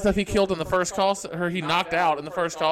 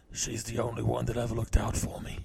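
very low, deep put-on voice; 7 semitones lower, 9 dB quieter than usual. Taking a turn quoting a movie line: Jason Statham impression. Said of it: "my turn".

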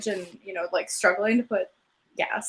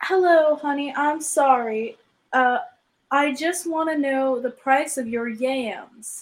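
slow, high, drawn-out put-on Southern US accent; 5 semitones higher, 5 dB louder than usual. Retelling a phone call from a US caller: imitating a Southern accent. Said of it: "the Southern accent from Henry's".

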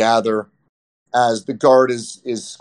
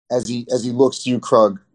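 usual speaking voice

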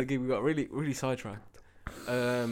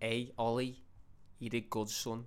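bad put-on Liverpool accent; 7 dB quieter than usual. Retelling what his dad said to him, in a bad Liverpool accent. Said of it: "It's less strong than that".

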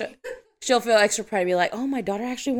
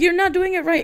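put-on, high-pitched, scolding yell in parent voice; 9 semitones higher, 4 dB louder than usual. Retelling how parents yell while teaching their kids to cook, imitating parents yelling. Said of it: "they'll be yelling at us".

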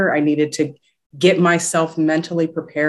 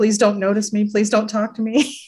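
play-acted timid, small, pitched-up scared voice; 5 semitones higher than usual. Speaker recalls being shy when she started out, mock-scared little voice. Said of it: "I was the scared little voice in the back".

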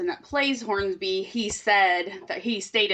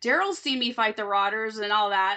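ordinary talk

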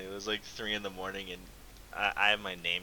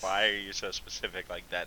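plain

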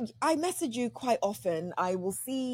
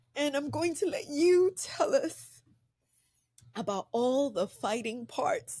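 tearful, crying speech; 3 semitones higher than usual. Moved by a beautiful book, handing the talk over to someone else: crying while speaking. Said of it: "I don't know why I'm crying".

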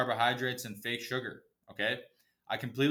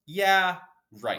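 normal talking voice

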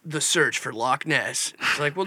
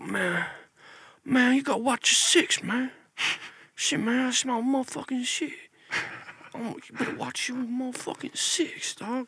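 put-on old man voice, very high-pitched; 9 semitones higher, 4 dB quieter than usual.

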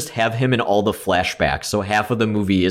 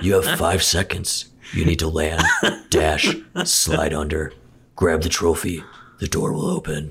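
put-on horror villain voice, lower pitch; 4 semitones lower than usual. Describing the steps to get a game trophy: Jigsaw impression. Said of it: "your Jigsaw impression".

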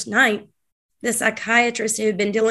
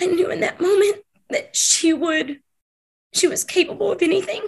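crying, much higher pitch; 9 semitones higher than usual. Recounting a sister's lie as the listener says take your time: crying while speaking. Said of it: "Take your time".

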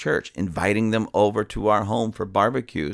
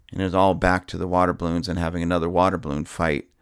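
ordinary talk, nothing marked

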